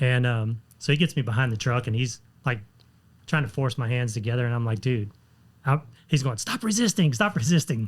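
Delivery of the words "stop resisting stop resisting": put-on yell, voice raised and pitched up. Retelling how a man behind the truck yelled at him, retelling a raised-voice yell. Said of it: "he's raising his voice and yelling at me".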